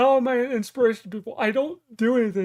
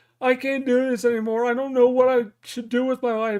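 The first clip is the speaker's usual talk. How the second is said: plain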